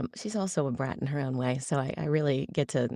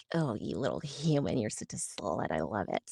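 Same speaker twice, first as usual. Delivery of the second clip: put-on spoiled, bratty little voice; 4 semitones lower, 4 dB quieter than usual. Show the voice you find so fun to do, addressing a human in a bratty character voice. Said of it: "it's just so fun to do that voice".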